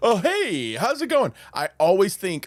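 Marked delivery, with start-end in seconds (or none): 0.0-1.3 mock-cheerful tone, much higher pitch. Imitating how a passive-aggressive man answers her: imitating a happy tone. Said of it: "answers in a happy tone, where he's like".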